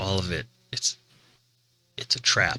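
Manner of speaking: hushed, soft half-whisper, just under talking. Game master voicing Cully, speaking over his shoulder to the party, whispering. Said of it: "you hear a whisper from Cully".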